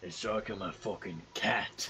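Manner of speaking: slow whisper under the breath. Playing a character who just caught a mouse: whispering to oneself. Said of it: "I whisper to myself".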